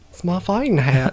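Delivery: put-on country accent. Voicing Finn defending his rabbit fighting hat: country accent. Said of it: "it's a country accent".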